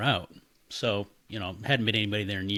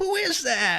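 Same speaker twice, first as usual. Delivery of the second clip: put-on very high, loud old woman's voice; 5 dB louder than usual. Retelling a voice heard inside a house with a buddy: imitating an old woman's voice. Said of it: "It was like an old woman's voice".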